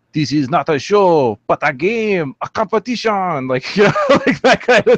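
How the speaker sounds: slow, poor attempt at a put-on French accent. Playing Phantom X in the game, in a bad French accent. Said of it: "I can't do a French accent, but like I do".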